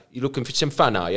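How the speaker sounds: put-on casual London cockney accent. Retelling a guy's words to him at a strip club; cockney accent impression. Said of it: "some cockney guy just being like".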